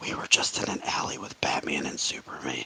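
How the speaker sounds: very quiet, barely audible whispered aside. Playing a character who leaves and tells Luke something: whispering in character. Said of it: "and I whisper to Luke".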